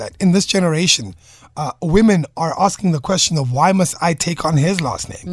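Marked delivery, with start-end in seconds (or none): none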